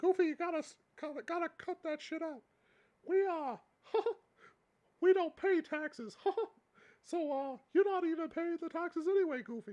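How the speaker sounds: loud squeaky voice. Playing Mickey answering Goofy in a made-up conversation, Mickey Mouse voice. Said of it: "If somebody could do better voices".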